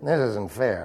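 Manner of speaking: muttering under breath. Retelling a two-year-old granddaughter sent to the corner, mumbling under her breath. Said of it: "Mumbling under her breath".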